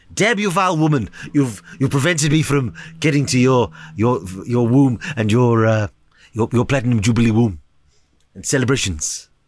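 put-on cartoon baby voice. Doing a poor Stewie Griffin impression for the others. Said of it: "a poor, uh, attempt at a Stewie Griffin impression".

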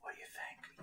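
loudish, hushed, carrying stage whisper. Voicing a dwarf leader asking a guard's opinion: loud whisper. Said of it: "she's kinda whispering kinda loudly".

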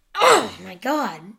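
sudden loud outburst with a rough edge. Breaking off a football prediction with a sudden loud exclamation. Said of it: "Sorry, that was loud".

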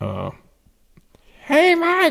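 put-on shrill, high-pitched shout. Retelling how a woman from the last house called out, in a shrill voice. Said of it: "she had a very shrill voice".

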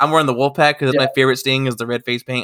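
ordinary delivery

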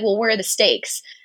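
plain

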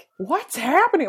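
mock wild, high, loud screamed yell. Speaker retells friends screaming at a guy while dressed as anime characters: retelling a scream. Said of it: "Like screaming at this guy".

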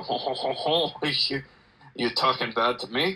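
bad, terrible put-on French accent. Acting out what one says back in French: terrible French accent. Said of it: "I just know how to do a terrible French accent".

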